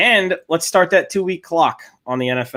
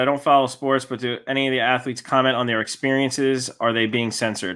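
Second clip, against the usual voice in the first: ordinary talk, nothing marked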